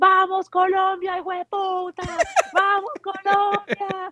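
very high, stretched-out, drawn-out scream. Speaker retells running to the TV set and starting to scream, retelling screaming. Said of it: "I started screaming".

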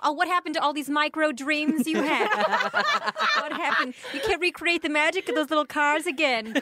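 high-pitched, sharply scolding tone of voice. Imagining a pregnant wife in an apron yelling at her husband: imagined wife yelling at husband. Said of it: "I like to imagine a wife yelling at him".

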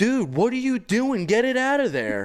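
shrill, very high, loud yelling. Telling a fishing story, the speaker acts out Jeff yelling at the speaker. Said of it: "he starts yelling at me".

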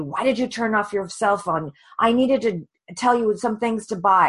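put-on angry screaming, reined in. Speaker retells her husband on the phone at her, imitating his screaming. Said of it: "my husband was on the phone screaming at me".

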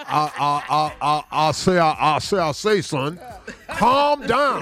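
put-on cartoon rooster voice. Describing how an argument sounds, doing a Foghorn Leghorn voice. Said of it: "that rooster be trying to talk".

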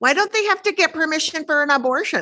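high, obnoxious put-on jerk voice. Speaker announces doing the asshole voice for a question, in put-on asshole voice. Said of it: "and I'm doing the asshole voice".

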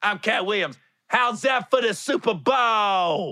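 slow, comic, loud, high, with "bowl" stretched long. Retelling a comedian's comeback line on stage: Cat Williams impression. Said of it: "Like this".

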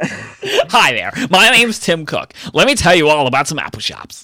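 weird, high, swooping, sing-song presenter voice. Topping another speaker's attempt with a weirder Tim Cook impression. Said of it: "he sounds much weirder than".

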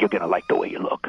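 put-on macho voice. Showing the macho voice borrowed from the Men's Wearhouse ad: Men's Wearhouse guy voice. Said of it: "give him a really sort of macho voice".

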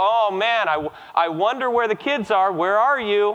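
playful, feigned puzzlement, slow make-believe searching. Retelling playing hide and seek with young kids: pretending not to find the kids. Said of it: "I'd walk through the room and go".

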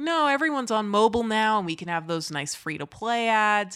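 normal talking voice

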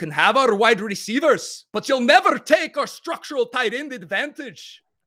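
very high voice, blended Irish and Scottish accent. Getting into character for a prompt, in an Irish-Scottish blend accent. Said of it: "maybe an Irish-Scottish blend".

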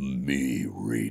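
put-on deep scary voice. Retelling a first line read as a big shark: imitating own ominous, deep, scary voice. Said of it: "ominous and deep and scary".

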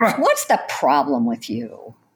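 contemptuous scoff. Demonstrating how to put a partner down: sneering contempt. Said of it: "putting your partner down with a sneer".

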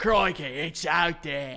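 slow, drawn-out, exaggerated put-on Australian accent. Only able to do Australian by speaking like Steve Irwin: Steve Irwin Australian accent. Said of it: "I can do an Australian accent only when I speak like Steve Irwin".

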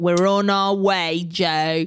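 imitated British accent. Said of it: "I haven't been doing the accent".

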